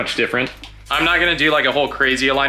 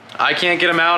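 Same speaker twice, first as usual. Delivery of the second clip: ordinary talk, nothing marked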